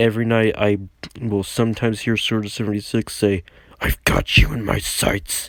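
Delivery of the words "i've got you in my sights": put-on demonic voice, much lower and slower. Recalling what a player says late at night, in Sword seventy-six's demonic voice. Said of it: "in his demonic voice".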